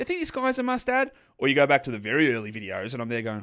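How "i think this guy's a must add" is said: put-on pitched-up old-fashioned broadcast voice. Showing how the voice sounded on old shows: imitating own earlier voice. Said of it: "my voice is".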